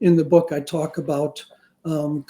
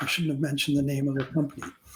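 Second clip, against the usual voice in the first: usual speaking voice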